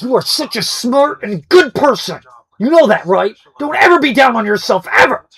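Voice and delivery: loud, forceful aggressive delivery. Recalling a man who did a bit of complimenting people: mock-aggressive. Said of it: "he would just be super aggressive".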